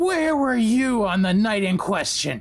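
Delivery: intimidating, high-pitched, yelling goblin voice. Playing a goblin interrogating a suspect, yelling with goblin intimidation. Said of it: "Why are you yelling at me?".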